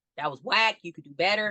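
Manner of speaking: blunt, harsh, critical fatherly voice. Contrasting their own encouraging coaching with their father's: imitating a harsh critical dad. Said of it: "My dad wasn't like that".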